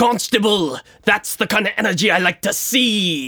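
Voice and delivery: yelling out. Playing the captain, calling to a rower on the leading boat: yelling out. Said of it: "I yell out to him".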